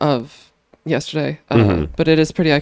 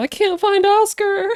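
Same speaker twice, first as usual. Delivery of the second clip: mock very high, frantic scream. Retelling running around looking for someone: imitating own past screaming. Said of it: "I was running around screaming".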